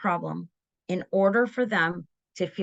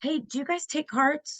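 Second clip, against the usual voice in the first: sweet, courteous, pitched-up polite tone; 7 semitones higher than usual. Describing how polite kids asked whether cards are taken, retelling a nice tone. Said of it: "With this nice tone of voice".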